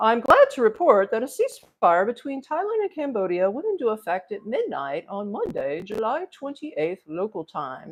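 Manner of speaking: put-on AI assistant voice, swooping and sing-song. Reading out an answer the speaker got from an AI, in an AI voice. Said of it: "That's my A I voice".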